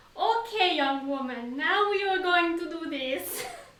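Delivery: put-on German accent. Quoting an older German post office worker who helped with stamps, in a German accent. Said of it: "I really like your German accent".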